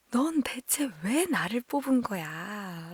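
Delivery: slow, comical, frustrated, quirky exasperated intonation. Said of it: "되게 재밌는 억양으로 말을 해요".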